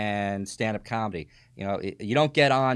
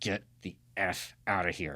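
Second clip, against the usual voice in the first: put-on mutter under breath, lower, quieter, slower; 4 semitones lower, 7 dB quieter than usual. Retelling what he said in the ring so the crowd wouldn't hear, retelling an under-breath mutter. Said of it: "he has to say it under his breath".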